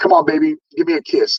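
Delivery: mock taunting, mocking, provoking tone. Retelling provoking someone at a rally: imitating a taunt. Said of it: "doing everything I can to piss this guy off".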